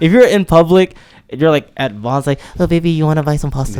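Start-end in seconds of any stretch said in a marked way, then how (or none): 2.6-3.8 sweet, cutesy baby talk in put-on Filipino accent. Acting out a couple talking in public: put-on filipino accent.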